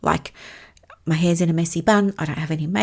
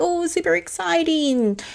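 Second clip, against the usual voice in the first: very high, rising, thrilled and excited voice; 10 semitones higher than usual. Explaining how voice carries meaning, demonstrating: rising, excited pitch. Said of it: "going up with your voice like this".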